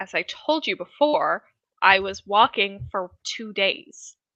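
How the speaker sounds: grumbly, grudging, grumbling tone. Voicing a character who answers a player's question, grumbling. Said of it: "kind of grumbles and says".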